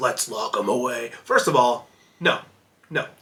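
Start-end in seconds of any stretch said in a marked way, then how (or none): 0.0-1.1 terrible, low, quiet caped-hero voice done badly. Discussing the Joker, doing a terrible Batman voice. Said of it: "that was a terrible Batman voice".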